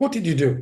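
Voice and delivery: mock put-out, annoyed, offended, accusing tone. Retelling a participant's repeated pushy question: imitating an annoyed voice. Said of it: "like I offended her".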